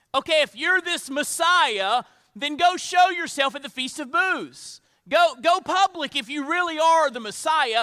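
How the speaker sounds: loud, sarcastic, taunting tone. Retelling a taunt by Jesus's brothers, imitating sarcastic brothers. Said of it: "his brothers here are being sarcastic".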